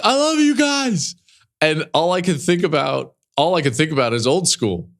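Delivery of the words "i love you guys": mock shout, pitched much higher. Retelling what a man shouted during an interview, retelling a shout. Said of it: "he just shouts, like".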